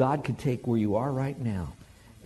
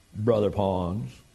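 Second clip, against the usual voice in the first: put-on slow southern Tennessee drawl; 3 semitones lower than usual. Retelling what the speaker said with a hand on his shoulder: imitating Mark's Southern Tennessee drawl. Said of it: "in his Southern Tennessee drawl".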